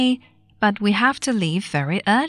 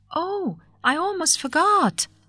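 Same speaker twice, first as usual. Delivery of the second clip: abrupt, high, slow, drawn-out exclamation; 9 semitones higher than usual. Narrator reading an old lady speaking to the sales girl, cried out. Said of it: "suddenly cried out".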